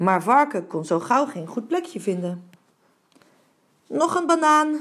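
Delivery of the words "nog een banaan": anxious, nervous, pitched-up calling voice. Pig, unable to find a hiding spot, calls to Baboon nervously. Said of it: "riep hij zenuwachtig".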